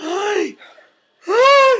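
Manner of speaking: very high, loud speech sucked in on the breath. Teaching a vocal exercise, demonstrating talking while inhaling. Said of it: "talk and suck in air at the same time".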